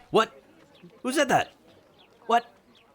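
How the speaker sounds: very high, jolted, startled yell out loud. A game master voices a character who got a whispered message; shouting out loud. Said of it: "He just shouts out loud".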